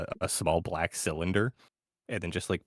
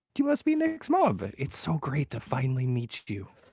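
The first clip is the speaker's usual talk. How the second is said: comforting, smiling, high and swooping voice; 7 semitones higher than usual. Voicing a character who squats beside a sobbing boy's mom: comforting smiling tone. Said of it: "comforting smile on his face, it just goes".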